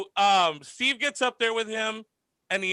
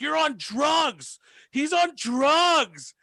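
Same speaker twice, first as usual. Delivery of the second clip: put-on very slow, high yell, drugs stretched out; 5 semitones higher than usual. Retelling how a crowd started yelling at a performer: imitating people yelling. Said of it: "they start to yell at him".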